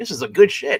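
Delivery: put-on sloshed, drunk man's speech. Retelling a comic scene where a drunk man speaks: imitating a drunk man.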